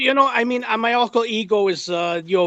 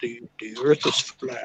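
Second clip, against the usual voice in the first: very deep, low put-on man's voice; 9 semitones lower, 8 dB quieter than usual. Speaker announces talking in another man's voice: imitating his voice. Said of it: "I'm going to talk in his voice".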